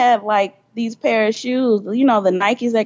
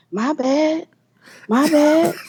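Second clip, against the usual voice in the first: very slow, drawn-out, slightly high drawl; 5 semitones higher than usual. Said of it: "in [name] voice".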